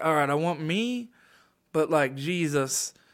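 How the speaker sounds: put-on very slow, dragged-out, stoned drawl. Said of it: "I just picture [name] getting real stoned and being like".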